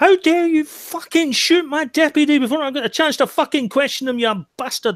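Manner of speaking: enraged, very high, furious yelling scream. A character turns on the one who shot his deputy, furious screaming. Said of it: "I'm just screaming at him".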